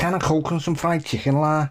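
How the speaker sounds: put-on Scouse Liverpool accent. Trying out the accent the other speaker just explained, in a Scouse accent. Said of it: "how to do a Scouse accent".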